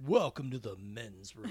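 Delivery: stoic, hyper-masculine tough-guy narrator voice. Imitating the building's bathroom narrator: John Wayne voice. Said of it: "hyper-masculine, like, John Wayne voice".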